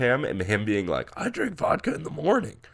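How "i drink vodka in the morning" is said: acted, very high, burped-out words. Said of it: "That was a pretty good burp impression".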